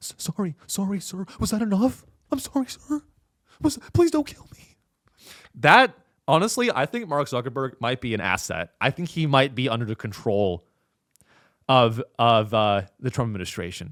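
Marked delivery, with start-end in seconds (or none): 0.0-4.8 high-pitched, stammering, groveling delivery. Retelling Mark Zuckerberg apologizing to Trump on a hot mic: imitating Mark Zuckerberg groveling. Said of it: "sound like someone who's a little bitch".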